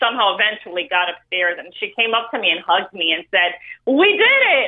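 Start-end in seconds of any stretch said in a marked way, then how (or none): 3.9-4.7 thrilled, excited, pitched way up. Recalling election night, speaker retells a woman hugging them and saying: retelling excited words. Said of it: "like all excited".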